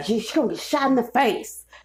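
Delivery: put-on disgruntled old-timer griping. Retelling a threat from a disgruntled older guy, imitating an angry old man. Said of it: "sound like an angry ass old person".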